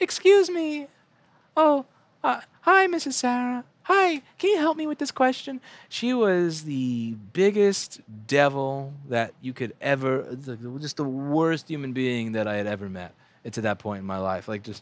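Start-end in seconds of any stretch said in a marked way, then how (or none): 0.0-5.6 sweet, very high, sugary, polite schoolgirl voice. Retelling how a classmate in second grade talked: imitating a classmate's sweet voice. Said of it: "she talked like this".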